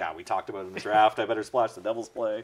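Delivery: ordinary delivery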